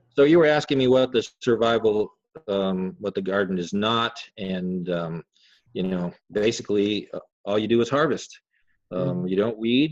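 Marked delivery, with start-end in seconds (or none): none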